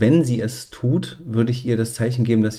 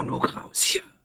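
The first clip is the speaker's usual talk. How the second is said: hushed, whispered shout; 8 dB quieter than usual. Calling over to someone to get out, whispered call. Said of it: "rufe ich flüsternd drüber ... So wie ich es jetzt mache".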